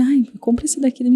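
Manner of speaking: laid-back, limp, unassertive tone with no firmness. Showing that speaking softly lacks firmness, quiet and without firmness. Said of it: "Se eu falar baixinho com você assim, bem de boa, falar assim".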